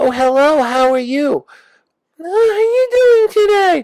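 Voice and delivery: very high, loud talking toy-car voice. Describing play with a daughter, the speaker voices a red boy-girl car. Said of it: "It will talk like this".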